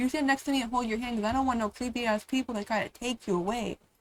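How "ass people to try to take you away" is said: normal talking voice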